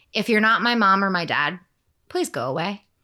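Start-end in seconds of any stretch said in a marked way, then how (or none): none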